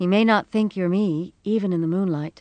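plain reading voice

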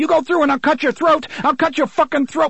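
very high, shrill, rushed screaming. Eddie yells at Roland as he moves toward the doorway, screaming threats. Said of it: "Eddie screamed".

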